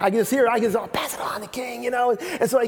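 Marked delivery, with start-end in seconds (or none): 0.8-1.8 hushed, quiet half-whisper. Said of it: "I think they had to whisper this".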